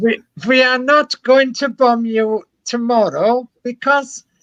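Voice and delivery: fake Italian accent, pitched very high. Describing a sketch where Hitler phones Churchill, the speaker attempts a bad Hitler impression, Italian-sounding. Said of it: "that's more Italian".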